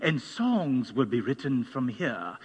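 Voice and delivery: put-on light, lightly done English accent. Quoting a man in England who gave a prophetic word, with an English accent. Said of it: "said it kind of with an accent".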